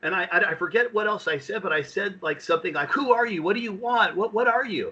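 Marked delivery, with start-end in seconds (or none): 2.9-4.9 put-on screaming, high and raised. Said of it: "As I yell".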